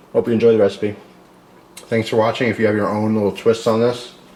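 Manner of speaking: speaking with mouth full of food. Closing a recipe video, thanking viewers while eating; talking with mouth full. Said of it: "I'm talking my mouth full".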